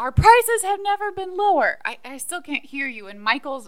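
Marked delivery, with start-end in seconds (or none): 0.0-1.8 full-throated, very loud, very high, shrill yell. Retelling how Dwight repeats himself because another man claims not to hear, retelling Dwight yelling. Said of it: "Dwight is yelling".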